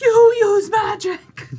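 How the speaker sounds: put-on booming voice. Retelling what they said during a game session, in a booming voice. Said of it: "I make my voice boom and I go".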